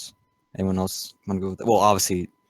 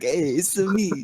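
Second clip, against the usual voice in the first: fake put-on Italian accent, much higher pitch; 10 semitones higher than usual. Picturing someone walking in wearing a chef hat, doing a fake Italian accent. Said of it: "Do a fake Italian accent".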